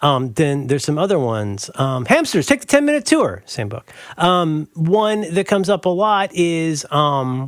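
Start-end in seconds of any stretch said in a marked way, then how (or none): 2.0-3.4 very high, yelled-out words. Yelling out remembered phrases from children's books: yelling out a phrase. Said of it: "I'm just gonna yell out some phrases".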